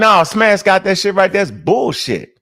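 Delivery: ordinary delivery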